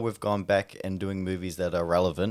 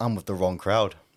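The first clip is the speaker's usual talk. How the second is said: ordinary delivery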